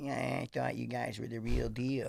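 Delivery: put-on rough, creaky voice. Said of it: "I think that's Mike Tyson".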